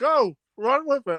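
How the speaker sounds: talking with mouth full. Speaker eating chips tells the others to go ahead: talking with mouthful of chips. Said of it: "I have mouthful of chips".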